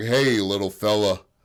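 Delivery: extremely deep strong man voice. Voicing the strong man in a retold story: very deep voice. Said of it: "That was the deepest voice I've ever heard".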